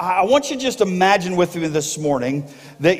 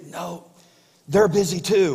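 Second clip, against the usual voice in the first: put-on whispering little boy voice; 4 dB quieter than usual. Retelling a joke where a little boy answers the phone: imitating a whispering little boy. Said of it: "the little boy was kinda whispering".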